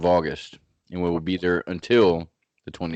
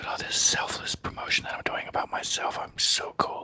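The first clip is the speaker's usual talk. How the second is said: put-on whisper, quieter. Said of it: "We might even whisper a little bit into the microphones".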